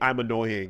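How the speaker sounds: normal talking voice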